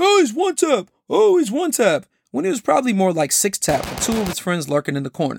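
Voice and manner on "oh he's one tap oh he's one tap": mock very high, drawn-out, pumped-up shrill yelling. Retelling a teammate's callout in a game, imitating a loud hyped scream. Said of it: "you screamed loud and all hyped".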